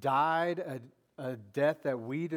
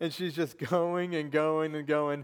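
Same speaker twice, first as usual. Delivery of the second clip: plain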